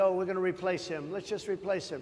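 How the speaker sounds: ordinary talk, nothing marked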